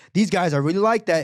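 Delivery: ordinary talk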